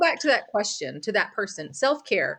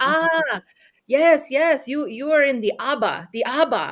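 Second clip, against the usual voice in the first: bad, slow, badly done put-on Italian accent; 4 semitones higher than usual. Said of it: "I'm gonna just totally trash an Italian accent".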